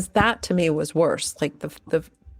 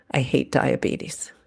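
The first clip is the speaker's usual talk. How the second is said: put-on very quiet voice, pitched lower; 4 semitones lower than usual. Retelling a child's words in the back of the car: imitating someone speaking very quietly. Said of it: "he very quietly in the back said".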